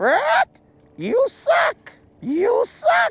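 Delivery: put-on, very high, slow, squawking parrot voice. Voicing the viewers as a parrot on the shoulder: put-on parrot voice. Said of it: "like the parrot on my shoulder".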